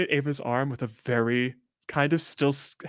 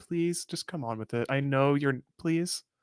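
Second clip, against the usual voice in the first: sweetest begging, quieter; 4 dB quieter than usual. Grabbing another player's hand in character and begging to leave: sweetest pleading. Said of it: "the sweetest sort of, like".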